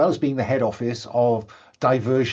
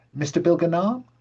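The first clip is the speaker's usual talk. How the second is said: put-on young woman voice, much higher; 5 semitones higher than usual. Narrator voicing a young woman greeting a guest inside the club, young woman's voice. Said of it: "a young woman comes up to you and says".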